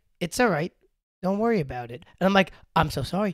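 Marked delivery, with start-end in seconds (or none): 0.2-2.1 put-on deadpan delivery, quieter. Retelling a woman's reply after the speaker apologized: imitating someone deadpan. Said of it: "so real deadpan. She's like".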